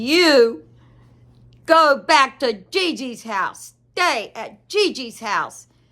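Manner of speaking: gruff, slow delivery with "you" drawn out. Retelling a grandchild's angry reply in the car: imitating a gruff child's voice. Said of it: "in this gruffy voice".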